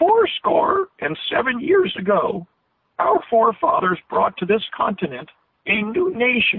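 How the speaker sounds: dry, high, thin rural Western twang, stretched. Retelling how the father imitated Lincoln's speech: imitating Lincoln's high-pitched twangy voice. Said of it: "my father imitated this dry, rural, twangy, even stretched voice".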